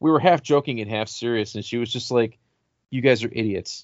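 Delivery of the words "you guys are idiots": put-on deadpan delivery. Retelling a girlfriend's reply to a half-joking plan; retelling a deadpan reply. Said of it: "I remember just deadpan".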